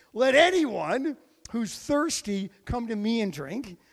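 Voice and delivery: loud proclaiming shout. Retelling a scripture scene, acting out a loud yell. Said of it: "Jesus is over there and he yells".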